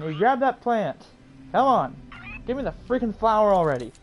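fed-up, impatient urging. Steering a stubborn game character toward a flower: getting really annoyed. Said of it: "I'm getting really freaking pissed".

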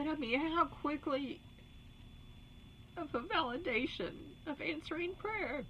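tearful, crying while speaking. Telling listeners about an answered prayer, speaking while crying. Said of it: "I didn't mean to cry".

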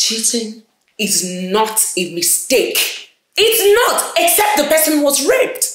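agitated, upset, rising in intensity. Arguing with someone over whether a kiss was cheating, upset. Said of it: "Clearly I can see you're upset, but I still need you to calm down".

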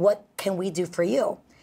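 ordinary talk, nothing marked

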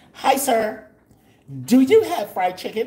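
high, loud, nice chirpy voice. Retelling how she greeted the restaurant man: imitating her nice chirpy voice. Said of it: "Her nice chirpy voice".

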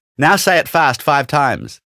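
plain

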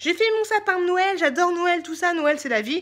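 high, loud, mock gushing fan voice.

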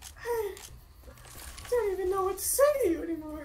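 squeaked out way up high. Stuck with two companions during the apocalypse, a player speaks in a Mickey Mouse voice. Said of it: "the Mickey Mouse voice is a great choice".

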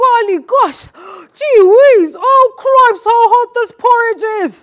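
shrill, piercing, very high, loud outcry. Narrator reading Dad at the breakfast table, crying out. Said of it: "Then Dad cries".

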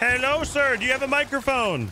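high, loud call carrying far.

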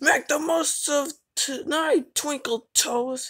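very loud menacing hiss. A diesel engine threatens the conductor at night, hissing. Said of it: "hissed Diesel 10".

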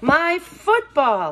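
sudden, high, loud exclamation. Scooter staring after the departing car, exclaiming. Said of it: "exclaimed Scooter".

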